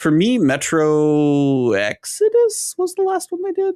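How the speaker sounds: voice jumping up, cracking high, slowed down.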